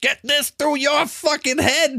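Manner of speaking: very high, fast, rattled-off delivery. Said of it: "Can you do Joe Pesci?".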